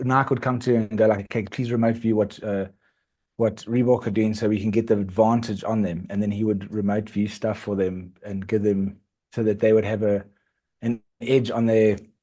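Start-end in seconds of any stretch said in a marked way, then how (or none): none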